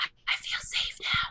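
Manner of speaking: put-on whisper. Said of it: "you sometimes gotta whisper".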